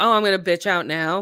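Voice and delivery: plain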